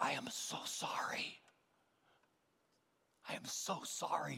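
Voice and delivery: slow whisper, fighting back tears. Recounting a woman who came up close to apologize, retelling a tearful whisper. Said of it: "fighting back tears, she got up close and whispered".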